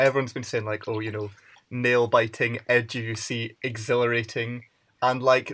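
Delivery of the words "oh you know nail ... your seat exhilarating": ordinary talk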